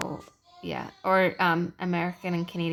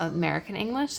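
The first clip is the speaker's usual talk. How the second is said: normal talking voice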